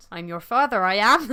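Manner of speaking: put-on low-pitched Bristol accent. Telling friends how the actor first did the film line: David Prowse's Bristolian accent. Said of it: "He did the film in his Bristolian accent".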